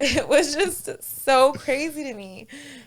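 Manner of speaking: slow, high-pitched laugh of disbelief. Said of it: "Yeah, we're not laughing".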